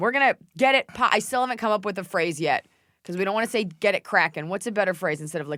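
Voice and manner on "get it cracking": ordinary talk, nothing marked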